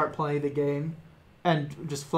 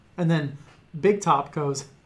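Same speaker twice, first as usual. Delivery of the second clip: normal talking voice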